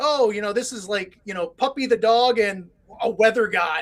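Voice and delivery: ordinary talk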